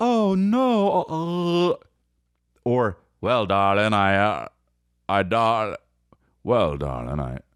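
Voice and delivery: put-on drowsy old-movie drawl, lazy and yawning, very slow. Mocking how old movie actors talk: imitating a lazy, yawning 1950s drawl. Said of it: "like they're about to yawn the whole time".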